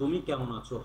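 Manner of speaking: plain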